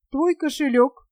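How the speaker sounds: ordinary delivery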